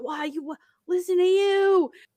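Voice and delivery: high-pitched, amazed disbelief.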